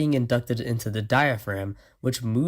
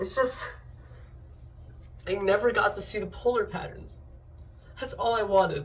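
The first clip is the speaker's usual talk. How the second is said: breathy fake sobbing, blubbering the words; 8 semitones higher, 5 dB quieter than usual. Answering why they are crying in a skit: mock crying. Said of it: "You're freaking crying".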